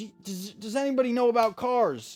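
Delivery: high, flustered, panicked yell. Retelling how a gym employee in a parking lot yelled: imitating someone yelling. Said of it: "she yells back, she goes".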